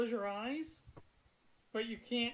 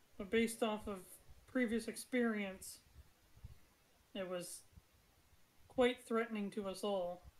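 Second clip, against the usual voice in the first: normal talking voice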